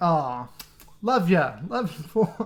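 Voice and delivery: fond, affectionate tone coming off sarcastic. A creator giving a shout-out to a fellow channel, sarcastic-sounding. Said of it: "I sound like I'm being sarcastic".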